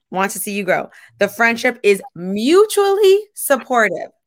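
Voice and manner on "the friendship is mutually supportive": mutually stressed, slow and higher. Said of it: "Emphasis on mutually".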